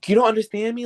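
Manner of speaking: high, exasperated, frustrated yell. Retelling an american tourist yelling at a local: imitating a tourist yelling. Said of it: "an American tourist yelling at this middle-aged".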